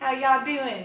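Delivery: loud, fake, put-on Texas accent. Greeting Christina from Texas: put-on Texas accent. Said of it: "That's my Texas accent".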